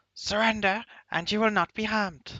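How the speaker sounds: very high-pitched, squeaking, squeaky shout. The narrator voices a familiar voice shouting at the listeners: high-pitched squeaky shout. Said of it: "very high-pitched, uh, squeaking voice shout".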